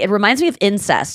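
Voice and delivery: ordinary talk, nothing marked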